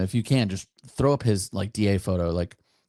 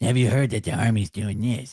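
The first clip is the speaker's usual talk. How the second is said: superhero voice blended with cartoon kid voice. Imitating a sergeant major in videos: Michael Weimer impression as Batman and Cartman. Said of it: "I make him sound, sound like Batman and Cartman".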